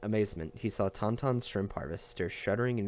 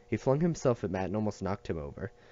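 ordinary delivery, nothing marked

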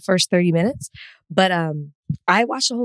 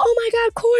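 recreated excited scream, much higher. Watching the Oscars with parents and seeing an acquaintance, retelling an excited scream. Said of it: "I screamed like he's my friend".

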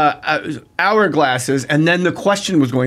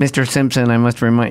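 mocking, put-on nerdy voice, lower pitch; 6 semitones lower than usual.

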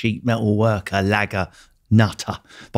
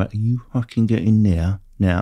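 put-on, menacing, scary Cockney accent. Recalling the man who never had to raise his voice, imitating terrifying Cockney. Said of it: "the truly terrifying Cockney can just give you some".

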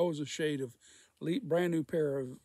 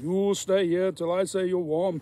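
commanding, firm tone in a put-on voice; 5 semitones higher, 9 dB louder than usual. Retelling a big coworker's order to stay put, in a Schwarzenegger voice. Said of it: "I sound like Schwarzenegger".

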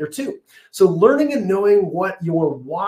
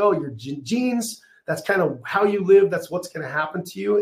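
normal talking voice

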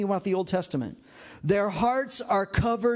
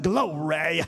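put-on preacher voice, lower; 4 semitones lower than usual. Showing the congregation how to say glory, use a backwoods Pentecostal preacher voice. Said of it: "say it like you're a Pentecostal preacher in the backwoods of North Carolina".

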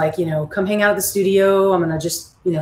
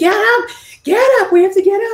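play-acted, shrill, very high, loud screaming; 5 dB louder than usual. Retelling panicking in the night about being asleep on stage: retelling own scream. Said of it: "and I'm like screaming".

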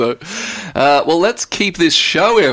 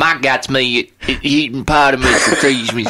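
put-on, mock Texas accent. Speaker tries out a line in a Texas accent. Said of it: "That's my Texas accent".

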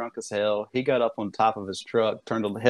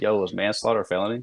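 usual speaking voice

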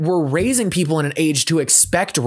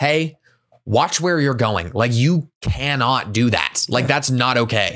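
play-acted low, even, calm stern telling-off tone; 4 semitones lower than usual. Retelling what the speaker said to a kid: retelling a calm scolding. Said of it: "I didn't even raise my voice".

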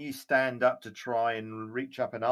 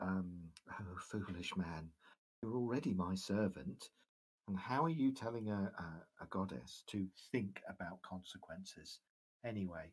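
soft laugh and quiet goddess-like whisper; 4 semitones lower, 12 dB quieter than usual. Game master voicing a goddess answering a player character, soft laugh and whisper. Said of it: "laugh softly and just sort of whisper".

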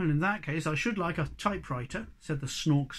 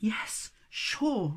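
breathed, higher pitch; 4 semitones higher than usual. Narrator reads the snork maiden answering the hobgoblin's question, breathed. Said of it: "breathed the snork maiden".

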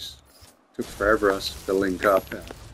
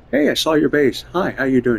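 tongue-in-cheek mock tone, higher and louder; 5 semitones higher, 4 dB louder than usual. Imitating another player's greeting about seeing the base: facetious put-on greeting. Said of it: "I'm being very facetious".

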